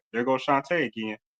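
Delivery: plain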